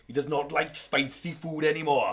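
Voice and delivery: bad put-on Welsh accent. Reading out a nurse's quote from a news story: bad Welsh accent. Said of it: "I apologise for anyone from Wales that heard that accent".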